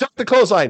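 mock shrill, very high, excited, carried-away shouting. Retelling how an excited wrestler calls his moves mid-match: imitating Cena yelling. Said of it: "he's just, uh, yelling it".

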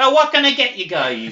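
put-on high old-lady voice. Retelling how a waitress at a comedy show took orders: imitating an old lady waitress. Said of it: "some old lady going".

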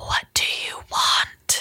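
eerie, slow, drawn-out creepy whisper. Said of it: "this beautiful, really creepy whispering".

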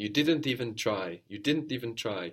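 ordinary talk

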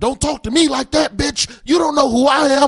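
furious, shrill, very loud screaming tirade. Retelling an extra snapping at the wardrobe assistant: imitating an angry outburst. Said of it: "You shouldn't make that guy angry".

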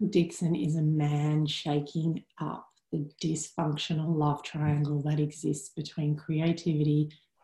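very low, really deep bass voice. Asked whether to use a normal voice, the speaker goes really deep voice. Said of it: "Really deep".

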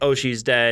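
plain

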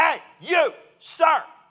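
high, shrill, loud yelled call-out. Recalling a TSA agent calling out to him from the security line: imitating a yell. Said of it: "and then she she yells".

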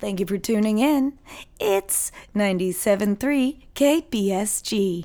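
soft and smooth radio dj voice. Doing a radio station sign-on for the hosts, in a soft, smooth jams voice. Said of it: "That was like a soft, smooth jams voice".

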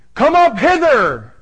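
high-pitched, drawn-out shout. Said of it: "and he shouts".

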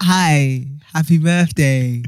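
put-on flat, lifeless tone. Retelling a birthday greeting from a video: imitating Steven's dead, flat delivery. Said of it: "with the deadest happy birthday ever".

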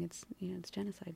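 very soft, unvoiced, hushed whisper.

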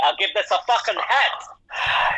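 put-on Scottish accent. Judging a Scottish-themed runway look, then rating it: put-on Scottish accent. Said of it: "in a Scottish accent".

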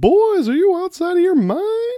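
hollered very high and swooping. Remembering a coach with a cool voice: bad Coach Sailor impression. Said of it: "That was a bad Coach Sailor impression".

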